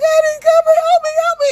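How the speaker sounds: very high, loud, sobbing crying voice. Acting out a wife being taken away, the speaker voices her plea, imitating crying. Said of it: "And you're crying".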